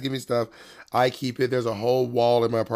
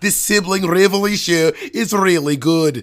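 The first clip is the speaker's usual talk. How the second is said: loud, high-pitched Scottish accent. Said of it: "the Scottish is more like".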